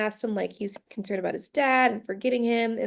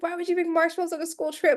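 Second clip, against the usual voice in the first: put-on stunned, incredulous, high, shocked disbelief; 6 semitones higher than usual. Retelling how a character reacted to marshmallows: imitating someone shocked. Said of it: "how shocked he was".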